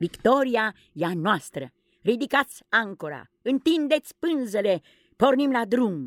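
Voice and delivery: gleeful, joyful, high-pitched barking voice. Narrator reads Peter ordering the crew after the victory aboard the ship, giving joyful orders. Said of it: "Ordonă bucuros Peter".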